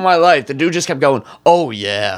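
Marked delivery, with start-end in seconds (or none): 1.5-2.2 put-on mascot-style shout, lower pitch. Retelling how a cooking show host kept going: Kool-Aid Man voice. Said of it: "he sounded like the Kool-Aid Man".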